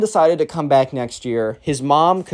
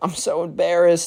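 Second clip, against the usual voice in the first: put-on tearful voice, higher; 4 semitones higher than usual. Retelling a boy's words as he tears up: imitating someone tearing up. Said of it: "starts to tear up again".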